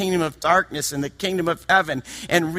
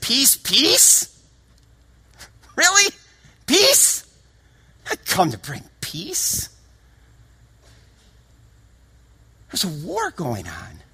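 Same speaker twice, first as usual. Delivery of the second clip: mocking, incredulous, sarcastic, pitched-up scoff; 2 semitones higher than usual. Quoting what Jesus said: imitating a sarcastic tone. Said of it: "almost sarcastically".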